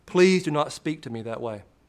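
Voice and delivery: ordinary talk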